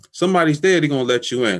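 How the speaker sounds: high, loud, excited calling out.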